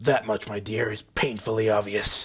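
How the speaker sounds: growling with open contempt. Narrator voicing a stallion glaring down at Twilight, growling. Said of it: "the stallion growled".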